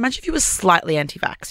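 normal talking voice

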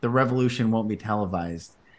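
ordinary talk

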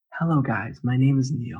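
soft, calm, serene, tranquil zen voice. Imitating a friend's intro on his account: imitating a zen, tranquil voice. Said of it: "amazing tranquility voice".

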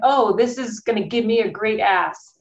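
plain

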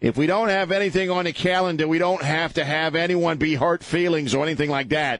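put-on New Jersey accent. Quoting a board member's remark, in a Doreen Roche New Jersey accent. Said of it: "she talks like she's from New Jersey".

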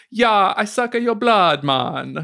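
put-on vampire voice with a Jamaican accent. Retelling his own line from a Halloween costume: Rastafari vampire voice. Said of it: "to be a Rastafari vampire".

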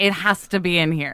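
ordinary talk

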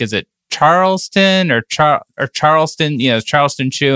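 plain

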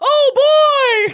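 oh stretched out, high-pitched and squeaky. Retelling an involuntary cry while falling during a backwards spin, in a Mickey Mouse impression. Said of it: "Like a straight Mickey Mouse impression?".

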